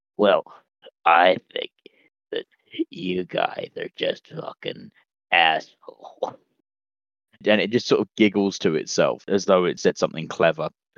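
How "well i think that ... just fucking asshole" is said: spiteful, wheezy monster voice, slow. A game master voices a creature speaking to the players: creature voice. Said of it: "You hear this thing say".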